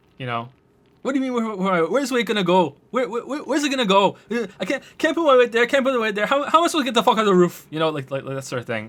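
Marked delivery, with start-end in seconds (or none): 1.1-7.7 bad Scottish accent, very high shrill ranting. Imitating a scottish man stuck on a roof in a viral video, bad scottish accent. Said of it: "that was a pretty bad Scottish accent".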